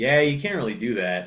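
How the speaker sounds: totally uninterested, apathetic, can't-be-bothered tone. Retelling what a roommate said after a night up: imitating someone apathetic. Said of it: "apathetic way possible".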